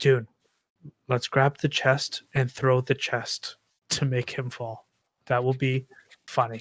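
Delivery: hushed whisper. Saying he will whisper to Dune, then doing it: whispering. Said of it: "I'm gonna whisper to Dune".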